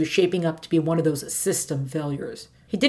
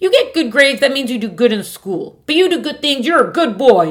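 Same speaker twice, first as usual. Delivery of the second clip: put-on elderly woman voice, firmly insistent, loud and high; 7 semitones higher, 7 dB louder than usual. A grandmother waving away her grandson's objection, insistent grandmother. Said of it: "and a glance up the steps to the front porch reveals his grandmother sitting in a deck chair. / Let an 82-year-old believe what she will. / and a glance up the steps to the front porch reveals his gra".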